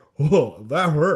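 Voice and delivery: loud, belted cartoon monster voice. Imagining how a quarterback talks, in a Monstar voice. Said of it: "he talks like the Monstar who took Sean Bradley's talent".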